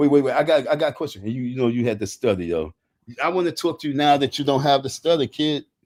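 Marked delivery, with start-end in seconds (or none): none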